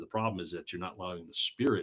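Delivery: ordinary delivery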